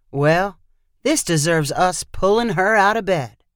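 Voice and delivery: plain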